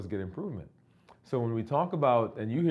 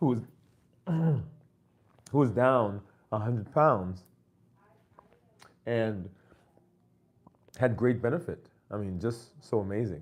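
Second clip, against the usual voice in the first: choked-up voice catching with emotion. Talking to viewers on camera; getting choked up. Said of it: "I'm getting a little choked up here".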